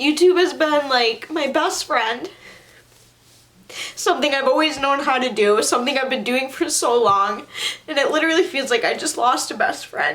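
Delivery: tearful weeping, voice pitched high. Explaining what they feel they have lost, crying. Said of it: "That's not why I'm crying".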